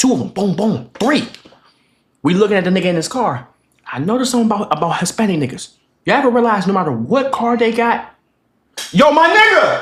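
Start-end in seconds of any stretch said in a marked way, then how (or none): 8.9-9.8 put-on high, hollered yell. Telling a story to the others about a coworker, yelling. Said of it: "Why are we yelling?".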